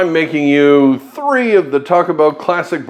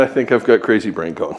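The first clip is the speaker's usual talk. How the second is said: ordinary talk, nothing marked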